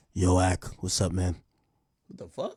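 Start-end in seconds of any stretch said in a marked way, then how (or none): 0.1-1.3 slow, drawn-out, stretched delivery. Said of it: "Drake, why you sound like this?".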